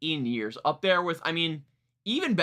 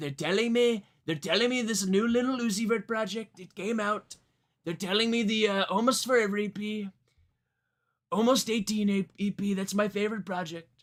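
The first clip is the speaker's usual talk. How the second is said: overblown caricature voice, every quirk overdone, pitched up; 5 semitones higher than usual. Showing how an impression overemphasizes quirks in delivery: exaggerated Trump impression. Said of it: "You're gonna do".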